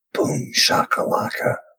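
hushed, soft, breathy whisper. Voicing a character after a perfect superhero landing: whisper. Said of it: "just kinda whisper".

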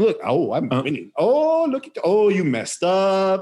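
put-on gloating tone. Imitating how he trash-talks the whole time they play, mocking gloating trash talk. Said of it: "he'll sit there and shit talk the whole time".

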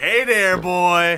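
very loud, high-pitched holler. Imitating how Ant says a greeting: imitating Ant's catcall. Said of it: "Sounds like more of a cat call when Ant says it".

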